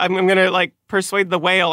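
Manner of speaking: ordinary talk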